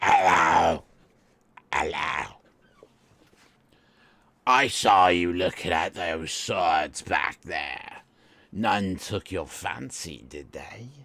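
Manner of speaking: put-on scratchy old man voice. Narrator voices an old man peering up at you, scratchy Dunbar Lap voice. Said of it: "He says in his scratchy voice".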